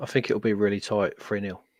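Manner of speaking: bone-dry, flat, deadpan, no-joke tone. Guest predicts the football match score: deadpan delivery. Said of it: "You've got such a deadpan Jack D type delivery".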